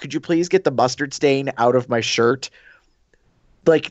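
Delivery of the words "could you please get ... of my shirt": plain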